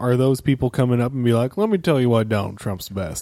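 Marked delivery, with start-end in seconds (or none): 1.6-3.2 put-on, faked Southern US accent. Acting out what imagined strangers might come up and say, put-on Southern accent. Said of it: "I went to a Southern accent".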